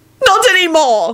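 very high, shrill, shouted yell. She replies to a boy's blurted remark, yelling. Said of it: "she yelled".

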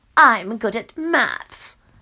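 smug, self-satisfied, drawn-out delivery. Reading a story aloud, a woman answers the narrator's question in a smug voice. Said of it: "She replies in a smug voice".

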